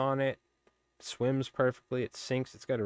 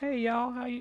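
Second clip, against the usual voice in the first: put-on friendly North Carolina Southern accent, very high-pitched; 13 semitones higher than usual. Retelling a waitress's greeting at a North Carolina breakfast place, imitating a North Carolina accent. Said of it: "And like that accent".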